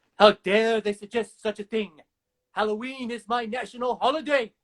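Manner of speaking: classic vampire voice. Quoting a favorite line delivery, from when he's checking out the news, in a Dracula voice. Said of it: "he actually does the really good Dracula voice".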